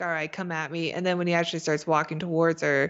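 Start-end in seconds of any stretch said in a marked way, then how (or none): 0.0-0.9 mock-threatening and quieter. Speaker acts out a character threatening a blurry man, mock-threatening. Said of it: "she's threatening him".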